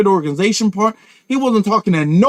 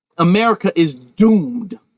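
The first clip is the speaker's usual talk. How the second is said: normal talking voice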